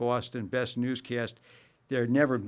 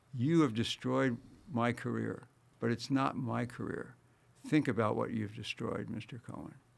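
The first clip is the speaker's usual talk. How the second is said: very quiet voice, getting quieter; 5 dB quieter than usual. Recalling a man who walked into his office, the speaker quotes him: quoting someone very quietly. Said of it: "very quietly said".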